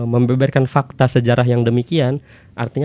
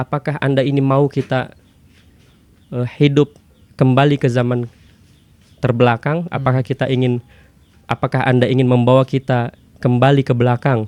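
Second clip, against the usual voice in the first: plain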